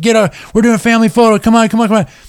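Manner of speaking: play-acted shrill, high-pitched hollering. Retelling how a photographer yelled to gather a crowd: imitating someone yelling. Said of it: "he starts yelling his head off".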